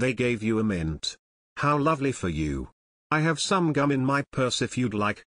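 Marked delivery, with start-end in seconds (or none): none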